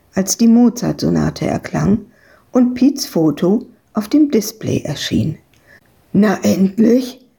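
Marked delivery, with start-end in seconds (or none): 6.2-7.2 panicked, panicky voice. Piet, finally reaching Evke on the phone, speaks in a panicked voice. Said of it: "klang seine Stimme panisch".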